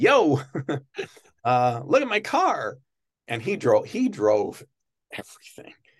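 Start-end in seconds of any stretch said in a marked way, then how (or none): 0.0-2.8 outgoing, high sing-song delivery, stretched out, swinging up and down. Contrasting Jay with soft-spoken Johnny: imitating Jay, opposite of soft-spoken. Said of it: "With Jay, it's like".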